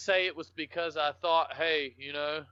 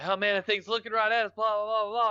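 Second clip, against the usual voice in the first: play-acted, flustered, panicked, rambling babble; 6 semitones higher than usual. Retelling how he acted on the trail, imitating someone freaking out. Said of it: "I ain't never seen my dad flip out".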